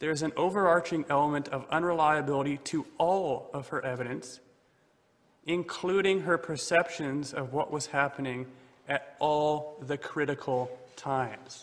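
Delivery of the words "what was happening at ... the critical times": normal talking voice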